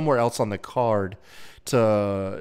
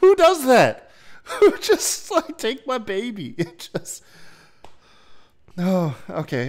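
laughing hard through the words, higher pitch; 10 semitones higher, 3 dB louder than usual. Reacting to a fan handing over her baby, laughing hard while talking. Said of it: "I'm laughing too hard at that one".

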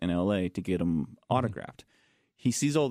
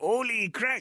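very high-pitched, silly goat voice. Recalling how he and his brother used to talk, goat voice. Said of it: "we would do the goat voice".

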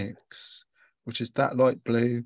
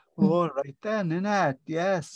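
put-on Welsh accent, higher pitch; 6 semitones higher than usual. Showing listeners how to try it themselves, the speaker starts off in a Welsh accent. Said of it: "He was imitating a Welsh accent".

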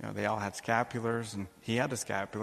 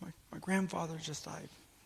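mock crying, higher and quieter; 7 semitones higher, 5 dB quieter than usual. Retelling what a young woman in tears said to the speaker, imitating someone crying. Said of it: "She's crying".

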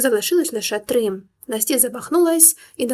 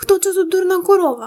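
shrill, high, loud, furious shriek; 7 semitones higher, 4 dB louder than usual. A narrator reads one character screaming back at another in a quarrel, shrieking. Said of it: "заверещала Тіна".

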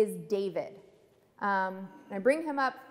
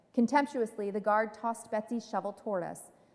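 ordinary delivery

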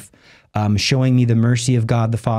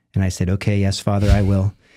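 ordinary talk, nothing marked

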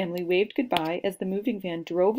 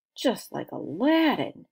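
loud stage whisper; 4 semitones higher than usual. Narrator reading a classmate's aside as the story title is announced, loud whisper. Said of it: "said in a loud whisper".

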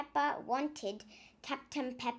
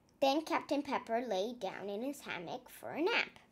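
plain reading voice

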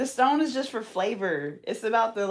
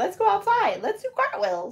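put-on very high, sing-song, babyish little-kid voice; 11 semitones higher than usual. Chatting about learning cartwheels as kids, voicing a child in a baby voice. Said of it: "Your baby voice is so funny".

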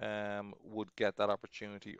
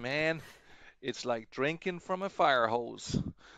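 bad, unconvincing put-on American accent; 4 semitones higher, 4 dB louder than usual. Quoting a man's answer to a question, in a terrible American accent. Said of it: "I do a terrible US accent, but I'm gonna give it a go".

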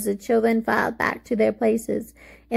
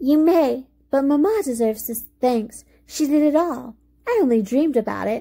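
in a sweet tone; 4 semitones higher than usual. Effie answers a child's thanks, speaking sweetly. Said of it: "as she said sweetly".

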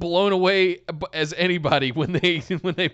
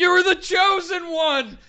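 mock yelling, higher; 13 semitones higher than usual. Recalling a backstage promo by imitating Obi-Wan yelling at Anakin. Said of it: "Obi-Wan yelling at Anakin".

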